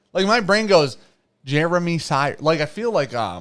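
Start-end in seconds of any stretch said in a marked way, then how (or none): 1.4-2.4 robotic voice with a Southern accent. Showing how a name sounds in the head: Southern robot voice. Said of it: "like a, a Southern robot".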